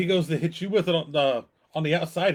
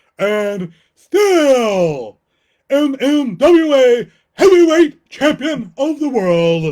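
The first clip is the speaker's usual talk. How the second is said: booming, long drawn-out ring announcer voice; 7 semitones higher, 11 dB louder than usual. Announcing a heavyweight champion of the world, Howard Finkel voice. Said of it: "I got to do it in my Howard Finkel voice".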